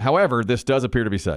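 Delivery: normal talking voice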